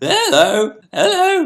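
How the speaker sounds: put-on very high, loud, squeaking, cracking teenage voice. Speaker shows how their voice breaks like it did at fourteen, voice cracking. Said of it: "my voice was breaking".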